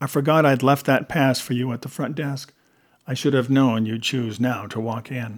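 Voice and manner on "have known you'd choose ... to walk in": plain reading voice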